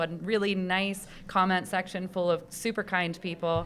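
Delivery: ordinary delivery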